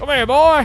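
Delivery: high, loud calling-out voice.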